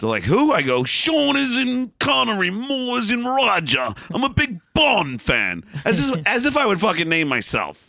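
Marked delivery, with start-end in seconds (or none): 0.8-5.6 clumsy fake British accent, pitched up. Speaker retells phoning as a fake assistant and explaining the name: bad british accent. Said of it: "I call with this bad British accent".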